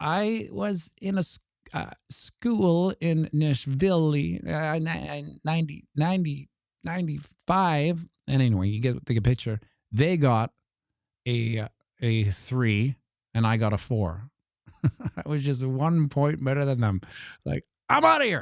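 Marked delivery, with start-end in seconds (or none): 0.0-8.1 stumbling, halting, very slow reading aloud. Speaker imitates how half the class read a text aloud, halting, stumbling reading. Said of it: "half the class read it like this".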